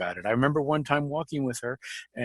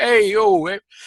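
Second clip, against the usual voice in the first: put-on New York accent; 8 semitones higher, 8 dB louder than usual. Imitating a friend as a stereotype New Yorker: put-on stereotype New Yorker voice. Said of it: "stereotype New Yorker".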